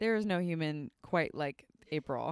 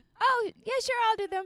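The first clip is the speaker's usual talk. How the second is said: very high, cute, little mini voice; 4 dB louder than usual. Showing how she would answer being asked to do the dishes: cute little voice. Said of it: "I love when you do your little mini [name] voice".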